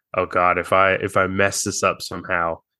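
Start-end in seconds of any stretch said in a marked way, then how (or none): none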